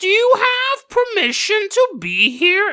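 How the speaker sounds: very high, slow, drawn-out, spooky, creepy drawl. Retelling a bear banging on a tent, in a Crypt Keeper voice. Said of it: "he's also now the crypt keeper".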